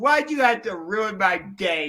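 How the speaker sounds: normal talking voice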